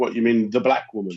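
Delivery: ordinary talk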